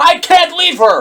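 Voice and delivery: mock, very high, shrill, loud toddler-like screaming. Speaker recounts a scene where Padme falls from a ship, retelling Anakin screaming. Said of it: "He starts screaming at the top of his lungs".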